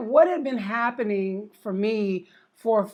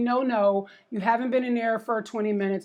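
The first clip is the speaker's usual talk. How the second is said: ordinary talk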